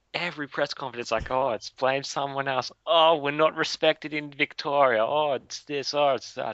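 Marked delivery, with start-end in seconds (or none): 1.3-6.5 whining, aggrieved, whingy complaining moan. Imitating a rugby league coach complaining at every press conference: imitating a whingy coach. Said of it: "wasn't even whingy".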